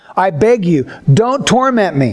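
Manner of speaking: usual speaking voice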